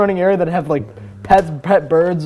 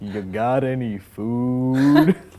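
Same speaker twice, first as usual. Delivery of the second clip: very slow, deep, drawn-out toad voice; 6 semitones lower, 3 dB quieter than usual. Game master voicing a toad speaking to a player; slow, deep toad voice. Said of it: "in this really slow and deep voice".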